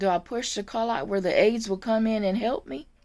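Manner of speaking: normal talking voice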